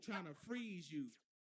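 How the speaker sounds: usual speaking voice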